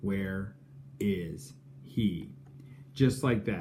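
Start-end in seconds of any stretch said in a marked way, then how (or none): 0.0-2.3 low, quiet menacing deadpan, every word equally heavy. Recalling mother opening the front door at dawn, in her quiet dangerous voice. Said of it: "in her most dangerous and quiet voice".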